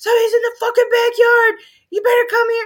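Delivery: very high, shrill, loud top-of-lungs scream. Retelling seeing someone in the backyard with a flashlight at night, retelling a scream. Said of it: "I started screaming".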